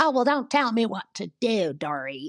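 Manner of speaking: play-acted, dramatic, high yell with southern accent. Describing how Sutton argues with Dory, imitating Sutton yelling. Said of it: "starts yelling and just saying".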